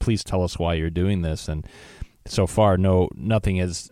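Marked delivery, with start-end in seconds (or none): none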